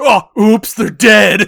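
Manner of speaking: put-on, very loud, high, booming, drawn-out, absurdly hammy. Retelling a movie scene, quoting a character: imitating a ridiculous line delivery. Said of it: "In the most ridiculous way ever".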